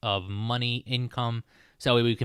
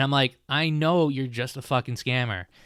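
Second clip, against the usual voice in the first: ordinary talk, nothing marked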